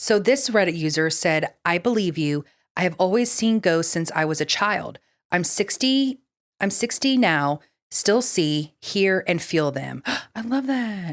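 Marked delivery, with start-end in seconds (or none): none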